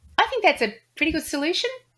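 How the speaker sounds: upward inflection rising on 'solution'. Discussing how statements come across, the speaker demonstrates a statement with an upward inflection. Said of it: "if someone was to say".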